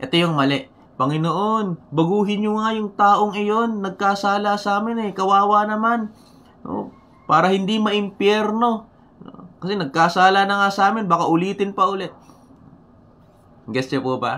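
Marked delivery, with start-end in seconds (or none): 1.0-12.1 put-on resentful, begrudging, angry voice, pitched up. Speaker acts out a prayer about someone who wronged them: mock-angry grudging prayer. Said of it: "iba yung tono ng pananalita, no? Pag nananalangin. Parang galit pa".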